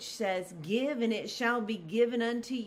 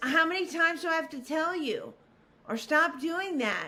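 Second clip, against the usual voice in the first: harsh, pitched-up scolding reprimand; 5 semitones higher than usual. Giving an example of how we correct people, in a harsh scolding tone. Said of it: "we say things harshly".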